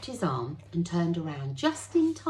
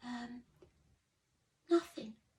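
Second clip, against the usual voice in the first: small, soft, pitched-up little voice; 6 semitones higher, 7 dB quieter than usual. A boy answers a man whose breath stank of booze, in a small voice. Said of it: "said Pip in a small voice".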